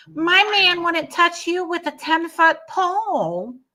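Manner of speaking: very high, squeaky put-on voice.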